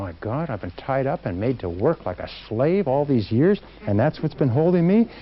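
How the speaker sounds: ordinary delivery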